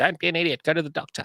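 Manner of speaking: high, nagging wife voice. Retelling what his wife said about seeing a doctor: imitating his wife. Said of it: "that's a fair impression of her".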